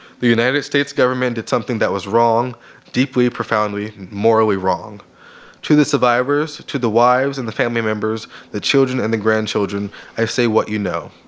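ordinary delivery

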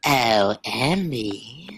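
put-on angel voice with one word drawn out. Speaker on a podcast does her angel voice: put-on angel voice. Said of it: "Let me do my angel voice".

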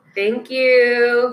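very loud fiery persona.

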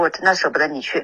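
ordinary delivery

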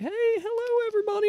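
very high, squeaky character voice on hello. Imitating Ronald McDonald greeting everybody as he comes in: Ronald McDonald voice. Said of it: "he's like".

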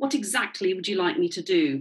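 plain

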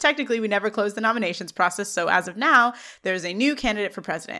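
plain

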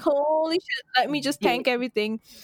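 ordinary talk

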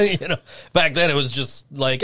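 ordinary talk, nothing marked

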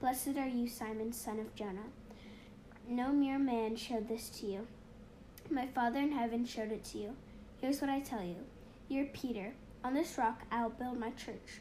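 ordinary talk

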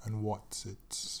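poor attempt at an English accent. Repeating the other speaker's phrase: attempted English accent. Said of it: "I can't do a English accent".

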